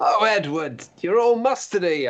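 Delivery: mock gleeful howl. Retelling teasing a statue with mustard: imitating own delighted howl. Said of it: "I'd howl in delight".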